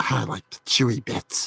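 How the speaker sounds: breathy, raspy, hushed monster voice. Narrator reads a Halloween boy speaking to Jimmy, raspy monster-like voice. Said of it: "in a raspy, monster-like tone".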